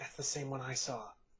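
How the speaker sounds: barely audible, hushed whisper. Voicing a character's line during a game scene: whispering. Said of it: "you just hear Socorro whisper".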